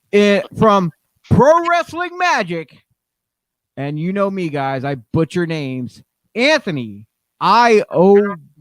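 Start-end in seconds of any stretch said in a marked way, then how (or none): 6.3-8.3 very, very slow, careful, loud delivery. The speaker carefully pronounces a name he admits he butchers, said very, very slowly. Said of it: "I had to say it very, very slowly".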